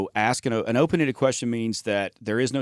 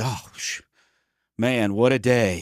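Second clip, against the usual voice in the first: gushing, effusive, very slow and expressive. Acting out an I personality type answering how the day goes: imitating an effusive I type. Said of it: "and I would be".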